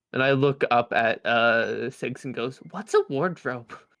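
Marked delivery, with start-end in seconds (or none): 2.7-3.7 stage whisper, loud. Asking another character in a stage whisper what a wardrobe is. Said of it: "Like a stage whisper".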